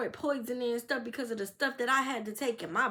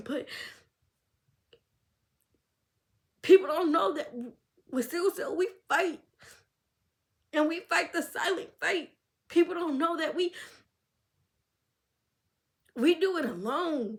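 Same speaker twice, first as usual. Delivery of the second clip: tearful voice, crying through the words; 4 semitones higher, 4 dB louder than usual. Talking about fighting sickle cell alone, the speaker apologizes, crying while speaking. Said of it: "I'm sorry for crying".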